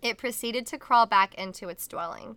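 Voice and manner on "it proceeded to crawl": ordinary delivery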